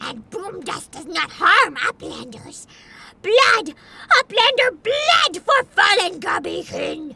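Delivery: ear-punishing, broken-grammar goblin creature voice. Streamer voicing a goblin during a game cutscene, goblin voice. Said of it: "in the middle of a goblin cutscene, so I'm sorry for your ears".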